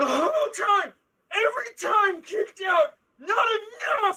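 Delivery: very high, raging, furious scream. Voicing a brawler screaming while hammering at a face: screaming in character. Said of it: "he is screaming as he just hammers".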